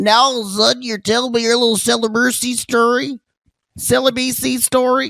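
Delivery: shrill, very high, derisive mock woman's voice. You announce you will make fun of this woman, then speak mocking a woman's way of speech. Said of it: "I'm going to make fun of this woman's way of speech".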